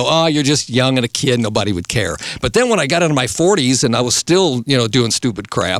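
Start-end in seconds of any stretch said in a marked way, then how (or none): none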